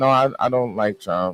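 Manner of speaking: ordinary talk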